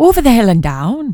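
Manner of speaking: speaking with an Irish accent. Asked to say something Irish, the speaker answers in an Irish accent. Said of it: "Say something Irish to me".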